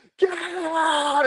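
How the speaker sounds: imitated scream, Scottish accent. Recounting how a woman in a trailer screamed at the speaker, retelling a scream, scottish accent. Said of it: "screamed at me, get in a Scottish accent".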